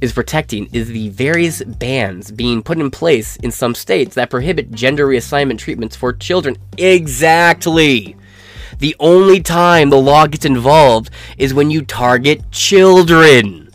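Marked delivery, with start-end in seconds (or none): none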